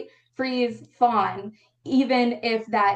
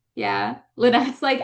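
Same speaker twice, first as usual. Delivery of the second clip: usual speaking voice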